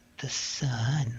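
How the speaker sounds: eerie, taunting, almost mocking repetition. Retelling how a voice on a recording echoed the prayer: imitating a mocking voice. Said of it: "it was almost mocking".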